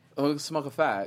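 faked British accent and pronunciation. Asked to say a phrase with a British accent: put-on British accent. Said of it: "just say it with a British accent".

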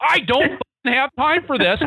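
mock very high, shrill, screeching scream. Retelling a partner screaming at a pig that wouldn't come: imitating someone screaming. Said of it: "she starts screaming at this pig".

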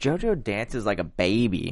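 put-on Philly accent, swooping sing-song tune. Quoting what Cindy said about JoJo: imitating Cindy's Philly accent. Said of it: "I love how you say it, just like her".

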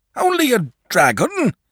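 words cried out, pitched very high. Narrator voices a father answering his sleepy son, crying out. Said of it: "cried his father".

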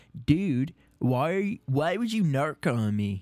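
put-on surfer-dude voice. Quoting the man who first used the word narc, in a put-on surfer voice. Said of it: "ever since he said it like that".

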